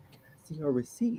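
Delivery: very quiet, soft and gentle voice. Retelling how a little lady asked for a receipt: imitating a soft-spoken lady. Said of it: "she came up to me real softly".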